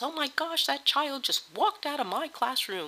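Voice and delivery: high-pitched, frantic outburst, going nuts. Imitating a teacher after a student walks out: imitating a teacher going nuts. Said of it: "the teacher just goes nuts".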